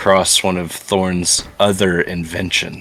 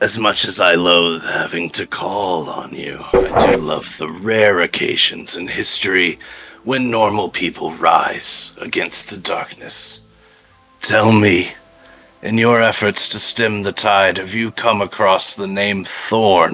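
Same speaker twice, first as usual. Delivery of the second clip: gravelly, grave character voice. Game master voicing Madam Frost addressing the investigators, gravelly, grave Madam Frost voice. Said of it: "really like gravelly, grave voice".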